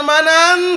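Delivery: high, loud, slow calling out.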